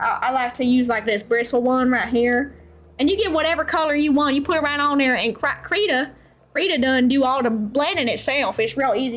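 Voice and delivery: Southern American way of talking. Talking the viewer through blending colors in krita, in a southern accent. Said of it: "brushed off some more southern accent".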